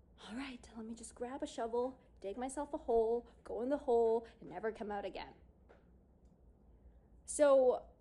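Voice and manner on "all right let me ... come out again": ordinary talk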